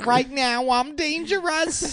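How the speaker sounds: very high, stretched, drawn-out put-on comedy character voice. Acting a lyric, then told to drop the Adam Sandler voice. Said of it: "Adam Sandler voice thing".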